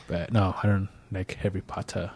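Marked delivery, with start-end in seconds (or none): 1.3-2.1 whispered, put-on British accent. Saying they don't like the books, British accent on 'Harry Potter'. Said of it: "It's like with the British accent".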